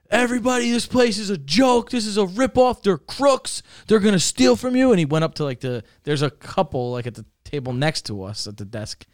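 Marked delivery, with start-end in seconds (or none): 0.1-4.9 mock angry, loud screaming. Speaker recounts a man standing up and screaming at everyone; retelling a scream. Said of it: "he starts like screaming".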